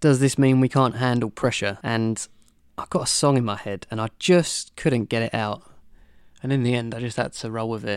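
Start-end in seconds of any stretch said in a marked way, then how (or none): none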